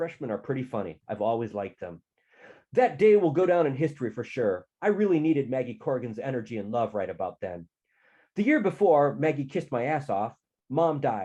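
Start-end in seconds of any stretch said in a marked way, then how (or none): none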